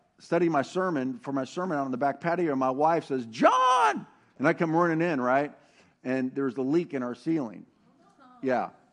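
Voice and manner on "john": put-on very high, stretched-out, urgent alarmed shout. Retelling how his wife called him inside, the speaker imitates her alarmed call. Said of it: "you can hear the tone of the voice".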